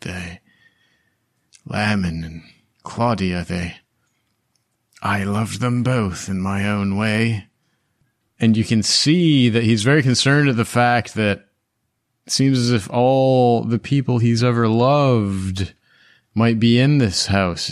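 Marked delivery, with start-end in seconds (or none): 0.0-7.5 half-whispered murmur under the breath. After the battle, a character kneels in realization, half-whispering to himself. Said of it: "he's whispering to himself".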